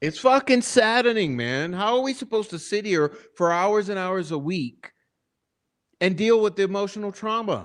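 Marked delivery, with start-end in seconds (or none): 0.0-1.7 frustrated, worked-up, heated, upset outburst. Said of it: "I screamed something. I yelled".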